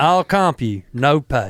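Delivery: put-on Southern American accent. Repeating a quoted message at another speaker's request: southern accent. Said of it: "Say it in a southern accent".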